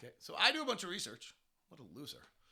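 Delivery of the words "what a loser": dropped to a quiet, self-directed murmur. Talking about oneself in the third person, then: Jim Gaffigan inner voice. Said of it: "now I'm doing my Jim Gaffigan inner voice at myself".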